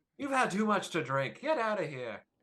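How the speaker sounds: annoyed, high-pitched scolding voice. Voicing the barkeep who tells a patron off: voicing the barkeep scolding. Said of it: "she slaps him across the head".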